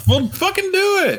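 very high, shrill, shouted yell. Urging another speaker to start reading aloud, yelling. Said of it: "stop yelling at me".

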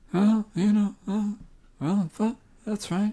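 very high, floating, ghostlike voice. Doing an impression when asked by another speaker: Casey Affleck as a ghost impression. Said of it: "do you wanna do your impression of Casey Affleck as a ghost?".

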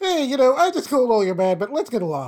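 acted-out, utterly plain, matter-of-fact, casual delivery. Retelling a character's line after a fight: imitating a matter-of-fact tone. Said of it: "the most matter-of-fact way possible".

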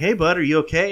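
loud calling out, yelling. Retelling stopping on a motorcycle to call out to a kid: retelling own yelling. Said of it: "And I'm yelling at him".

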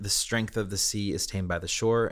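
ordinary delivery

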